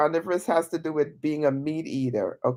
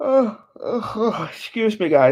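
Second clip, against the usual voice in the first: said through a high, drawn-out yawn; 5 semitones higher than usual. Talking to his audience at almost three, the speaker is yawning. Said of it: "Sorry for yawning".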